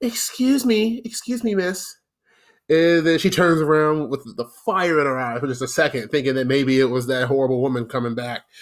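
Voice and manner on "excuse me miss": put-on, pitched-up, overly polite best-manners voice. Retelling getting a woman's attention to ask for the manager, putting on best polite voice. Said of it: "I put in my very, very best polite voice".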